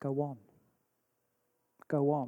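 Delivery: quiet, low, slow voice, barely above a breath. Retelling the voice of the Holy Spirit urging them on, on a bus: quiet voice. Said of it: "this quiet voice of the Holy Spirit saying".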